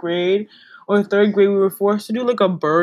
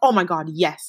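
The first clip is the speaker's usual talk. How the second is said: mock excited enthusiasm, lower; 3 semitones lower than usual. Retelling how she answered an invite to work out, imitating excited enthusiasm. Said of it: "enthusiastic, like, so excited".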